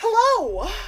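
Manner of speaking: high, loud fairy voice calling out.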